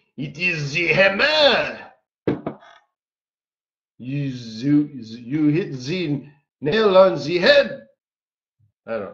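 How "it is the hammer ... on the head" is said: put-on loose French-Canadian accent. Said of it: "I don't know what accent that is".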